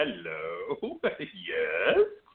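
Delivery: low, creepy villain voice, hello stretched out. Recalling the villain answering when they barge in on him, imitating a creepy voice. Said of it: "in that creepy ass voice of his".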